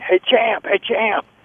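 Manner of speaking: high yelled call, carrying a long way. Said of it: "People cranked down their car windows yelling".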